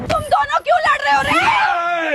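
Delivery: loud yelling.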